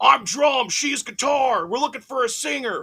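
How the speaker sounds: put-on very high, slow Philadelphia accent. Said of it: "the best [name] accent because he's got that Philly accent".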